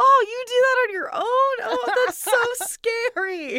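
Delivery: very high, very loud freaked-out cry. Retelling a reaction to someone flipping an eye: imitating someone freaking out. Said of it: "freaking out".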